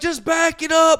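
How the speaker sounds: acted yelling. Retelling faking a roadside scene on a phone call: imitating own past yelling. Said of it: "I'm yelling off onto the side".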